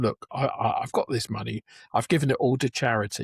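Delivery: ordinary delivery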